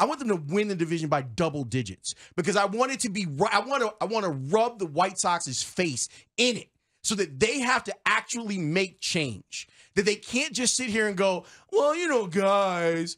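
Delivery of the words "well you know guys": slow, sad, drawn-out drawl on guys. Mocking the team's excuses for a bad season: Tony Gill sad voice. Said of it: "I'm gonna do the Tony Gill sad voice".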